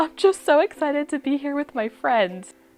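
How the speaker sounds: high, teary, emotional gushing through crying. Recalling a friend crying on the Brooklyn Bridge, imitating Ariana crying. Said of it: "she's so emotional".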